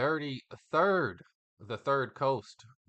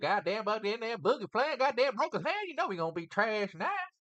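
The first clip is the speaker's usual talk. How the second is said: higher-pitched Arkansas sports fan voice; 9 semitones higher, 3 dB quieter than usual. After the top scorer breaks his hand, the speaker mimics a fan: imitating an Arkansas fan. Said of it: "it's probably more like".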